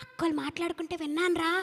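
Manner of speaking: low, soft, hushed murmur. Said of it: "నీకొక secret చెప్పాలి, దగ్గరికి రా".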